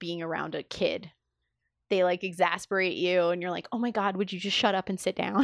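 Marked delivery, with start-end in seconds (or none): none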